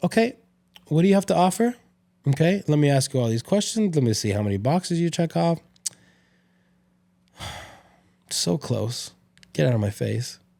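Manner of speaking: play-acted dismissive, judgmental, sizing-up tone. Imitating women who sit with arms crossed judging guys: imitating a dismissive picky dater. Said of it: "sit there with their arms crossed and be like".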